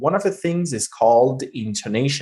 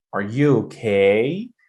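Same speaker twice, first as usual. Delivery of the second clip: rising pitch at the end of drawn-out okay. Teaching how a question sounds, demonstrate rising intonation. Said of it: "When your voice goes up".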